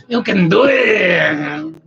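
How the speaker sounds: high, loud cry, belted slow and stretched out. Suggesting how a line could be read, Rob Schneider voice. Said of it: "in the Rick Schneider voice".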